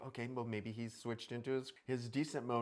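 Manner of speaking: ordinary delivery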